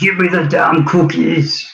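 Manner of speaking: echoing high character voice. Retelling a voice heard echoing through the house: Arnold Schwarzenegger voice. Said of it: "it's Arnold's voice just echoing through my house".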